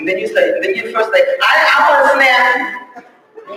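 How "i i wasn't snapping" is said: mock very slow, drawn-out, testy snapping. Acting out a reply to a spouse: imitating a snapping reply. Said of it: "You snapping right then".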